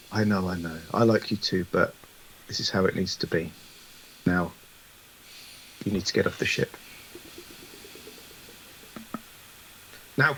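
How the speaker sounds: low, close, leaned-in private whisper. A game narrator voicing Mensa, leaning in close to a player's character, whispering. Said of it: "leans in closer and whispers".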